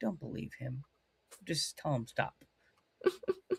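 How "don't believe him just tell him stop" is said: much softer, quiet hushed voice. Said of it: "they all look around their laptops like".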